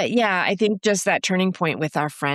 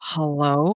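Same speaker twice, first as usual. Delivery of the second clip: imitated nervous, timid voice; 2 semitones lower than usual. Retelling answering a call from a brother: imitating a nervous hello. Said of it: "I was nervous".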